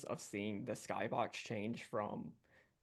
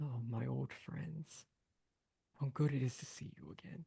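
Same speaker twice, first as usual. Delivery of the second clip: warm, slow, unhurried, distant dragon voice. A game master voices a dragon coiled atop a walking castle: warm, slow, distant voice. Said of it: "in a warm, slow voice that sounds as if it was coming from far away".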